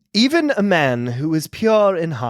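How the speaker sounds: slow, measured narrator reading, like opening narration. Reading the opening poem of a movie: Emily Blunt impression. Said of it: "this is my Emily Blunt impression".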